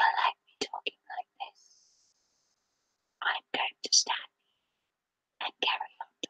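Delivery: fast, very quiet, creepy, hushed whisper. Retelling a woman's creepy video, imitating a creepy quiet threat. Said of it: "threatening to stab people in a really quiet voice".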